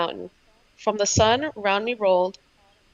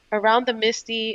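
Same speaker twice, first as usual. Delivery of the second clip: ordinary delivery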